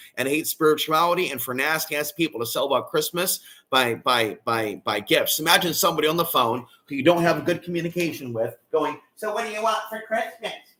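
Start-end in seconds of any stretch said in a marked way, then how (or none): 9.2-10.6 put-on really irritating baby-talk voice, high and soft. Imagining someone on the phone you don't communicate well with: really annoying baby voice. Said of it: "in a really annoying baby voice".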